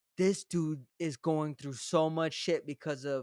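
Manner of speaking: normal talking voice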